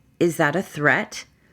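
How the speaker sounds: normal talking voice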